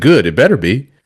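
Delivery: ordinary talk, nothing marked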